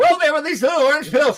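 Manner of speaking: very high, rushed, panicked, freaked-out voice. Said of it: "super high on some kind of drugs".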